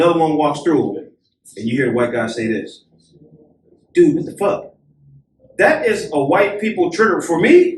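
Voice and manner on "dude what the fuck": mock aggressive tone, imitated aggressive male voice. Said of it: "in that aggressive tone".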